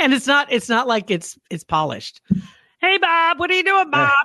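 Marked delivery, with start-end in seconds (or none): 2.8-4.1 strange, very high, squeaky dubbed cat voice. Describing a man who dubs voices for cats; weird dubbed cat voice. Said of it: "just like these really weird voices".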